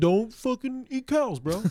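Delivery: very high-pitched dude-bro voice. Imitating a vegan skateboarder who is a typical bro: Joey Brzezinski impression. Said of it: "he's a bro vegan skateboarder, so he'd be like".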